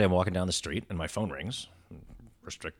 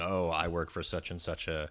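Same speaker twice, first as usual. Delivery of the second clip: ordinary delivery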